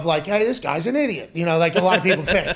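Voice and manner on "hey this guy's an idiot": normal talking voice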